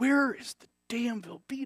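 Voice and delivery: acted muttering under breath. Retelling looking for the Velveeta, acting out muttering under the breath. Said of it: "under my breath".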